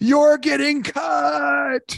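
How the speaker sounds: very high, raspy, shrill shriek, drawn out. Retelling what his wife screamed during the birth: imitating a scream. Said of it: "at the top of her lungs, she screams".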